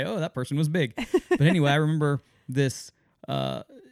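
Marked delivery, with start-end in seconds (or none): none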